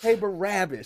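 irritated, annoyed, fed-up tone. Quoting a line she rewinds all the time, the speaker does it mock-annoyed. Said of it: "He just says it so, like, annoyed".

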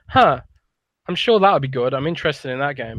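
ordinary talk

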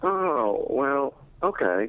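high, slow, unexcited tone. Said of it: "you don't sound excited".

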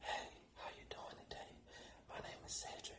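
whisper-soft, hushed, angelic voice. Teaching how to relax people instead of being loud, soft angelic voice. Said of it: "You gotta be soft".

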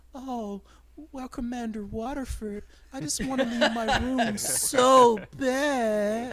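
cartoony, over-the-top fake seductive voice, very high, slow. Imitating a woman whose tone switches, cartoony mock-seductive put-on voice. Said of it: "such a fucking cartoony, like, oh my sexy God, I'm going to manipulate him voice".

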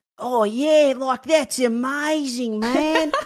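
over-the-top Australian accent, very high and loud. Mocking how Americans imitate Australians, exaggerated stereotypical Australian accent. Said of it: "Like that kind of thing".

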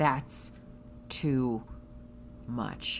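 play-acted, very wooden, stiff, stilted delivery. Speaker quotes the only thing a man said to someone overdoing it, very stilted voice. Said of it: "all he says in a very stilted voice is".

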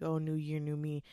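plain

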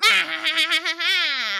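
loud, high, maniacal laugh. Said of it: "Neville maniacally laughs".

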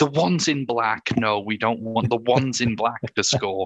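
loud voice talking over another. Retelling talking over a three-year-old at a match, retelling talking loudly over someone. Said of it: "loudly talk over him and say".

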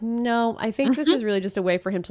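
ordinary delivery

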